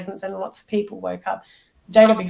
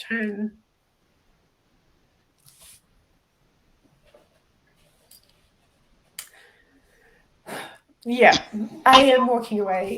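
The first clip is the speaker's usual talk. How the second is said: emotional, halting delivery with words trailing off; 3 semitones higher than usual. Saying they are walking away after asking for a moment: emotional. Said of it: "I'm just going to take a sec".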